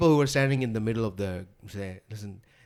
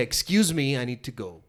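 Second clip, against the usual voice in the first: annoyed, angry, no-nonsense, direct tone; 4 dB quieter than usual. Asked how to get someone to move, the speaker shows what they'd say: acting out an angry request. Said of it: "if I'm angry, I would say".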